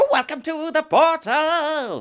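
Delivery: very high-pitched voice. Asked to give us another one: incredibly high-pitched voice. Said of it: "give us another one".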